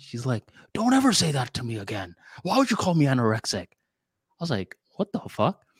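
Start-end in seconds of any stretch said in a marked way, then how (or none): 0.7-3.7 freaked-out, offended, angry, upset yelling. Retelling what she said when she freaked out, imitating someone yelling. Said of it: "She starts yelling at me".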